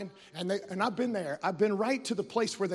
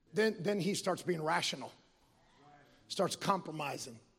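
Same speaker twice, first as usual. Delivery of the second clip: ordinary talk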